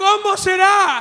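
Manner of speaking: put-on high, shouted old man voice.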